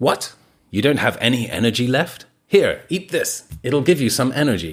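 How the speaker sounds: casual, relaxed put-on American accent. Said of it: "I did that in an American accent".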